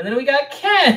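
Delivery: put-on announcer delivery.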